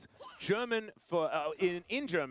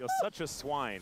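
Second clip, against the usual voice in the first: plain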